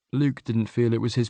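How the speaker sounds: ordinary delivery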